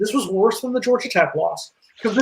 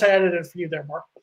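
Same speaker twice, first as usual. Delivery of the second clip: plain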